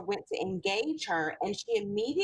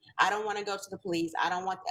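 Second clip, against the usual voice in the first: mock childlike crying, lower and faster; 2 semitones lower than usual. Retelling how a six-year-old begged a police officer, imitating a child crying and begging. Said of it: "she's crying, begging him".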